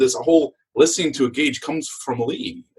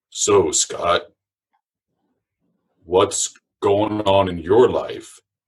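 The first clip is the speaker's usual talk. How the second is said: put-on deep, slow voice, close up; 6 semitones lower than usual. Retelling a man who stepped up close and questioned the speaker, imitating a deep voice. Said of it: "he has this deep voice".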